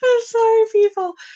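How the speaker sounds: giggling and laughing through the words, very high. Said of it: "I'm laughing at that".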